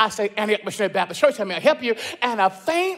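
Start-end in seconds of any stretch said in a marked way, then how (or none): 0.4-2.0 hurried, rattled-off, rushed delivery. Retelling answering a ringing church phone while busy, retelling a rushed phone answer. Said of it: "with a rush in my voice".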